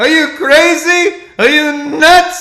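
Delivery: very high-pitched, very loud, drawn-out yell. Retelling a comedian scolding him over an impression: imitating Chris Rock yelling. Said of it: "Chris Rock yelled at me".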